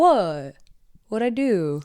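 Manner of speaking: dog voice, very slow and drawn out. Voicing the dog after his bone was taken away: voicing the dog. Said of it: "He's like".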